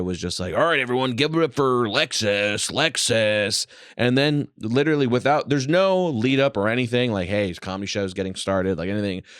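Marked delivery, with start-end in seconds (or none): 0.5-3.7 club DJ announcer voice on the mic. Telling a story about a strip club, imitating the DJ announcing a dancer: strip-club DJ voice. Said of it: "dropped the D J voice".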